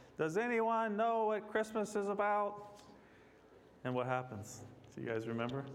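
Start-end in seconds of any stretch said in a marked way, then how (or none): 0.2-2.8 high, frustrated screaming. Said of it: "he screams out".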